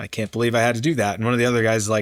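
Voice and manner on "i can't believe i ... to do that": usual speaking voice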